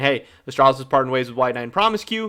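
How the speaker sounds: ordinary talk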